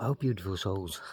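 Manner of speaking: whispering. Speaker narrating their walk up the street, whispering. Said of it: "Yeah, I'm whispering".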